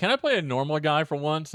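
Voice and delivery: ordinary talk, nothing marked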